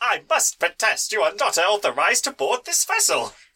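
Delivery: high, put-on robot butler droid voice. Voicing a protocol droid objecting to boarders: protocol droid voice. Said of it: "this protocol droid is saying".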